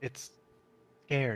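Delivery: soft, hushed whisper under the breath. Voicing a character who speaks about a frightened thing: whispering. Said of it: "And Goss will whisper".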